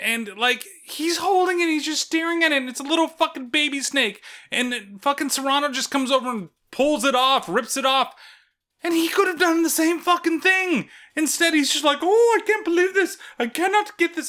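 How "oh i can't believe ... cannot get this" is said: put-on Indian accent, pitched high. Retelling Winston failing to pull off the snake: Winston in an Indian accent. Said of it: "Why is he fucking turning Indian here?".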